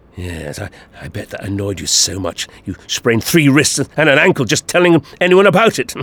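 ordinary delivery

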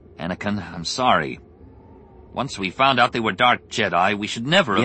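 ordinary delivery, nothing marked

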